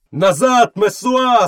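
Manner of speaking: bellowing mob roar, pitched very high. In a read story, a crowd orders a woman to get back, roaring. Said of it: "заревів натовп".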